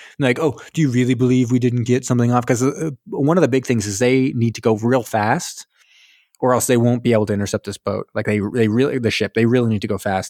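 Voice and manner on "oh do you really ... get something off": mock self-satisfied, smug tone. Retelling what the Nazis say: imitating a self-satisfied, smug tone. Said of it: "self-satisfied and a little smug".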